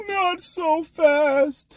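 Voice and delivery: voice pitched way up high. Answering people who doubt a player's future: Lee Corso voice. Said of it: "in my Lee Corso voice".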